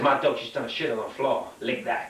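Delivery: ordinary delivery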